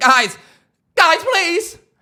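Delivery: high-pitched, terrified, pleading voice. Retelling being begged to stop yelling while doing taxes: imitating Edith, terrified. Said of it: "She was terrified".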